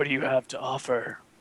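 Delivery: raspy voice. Narrating a scene, voicing a character offering work to a player, raspy voice. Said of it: "he in a raspy voice says".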